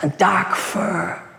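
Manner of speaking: plain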